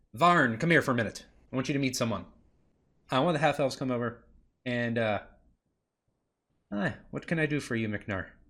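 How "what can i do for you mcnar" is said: soft put-on fantasy dwarf character voice. Narrating a game, voicing a half-elf who answers mcnar, in a dwarf voice. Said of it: "That's not an elf voice. That's another dwarf voice".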